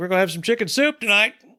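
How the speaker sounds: bright, cheerful manner. Retelling what someone said on walking in: imitating a cheery tone. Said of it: "just in a cheery manner".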